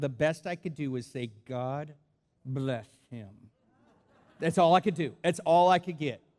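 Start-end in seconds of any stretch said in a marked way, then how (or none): 1.5-3.3 acted mutter through gritted teeth, lower, quieter, slower. Retelling what he said under his breath walking past a man, retold mutter through gritted teeth. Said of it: "I gritted my teeth, and under my breath".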